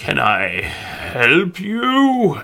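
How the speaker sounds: very slow, drawn-out, swooping, ancient crackly voice. A narrator voices a creature greeting the listener, in an old crackly voice. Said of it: "An old crackly voice speaks out".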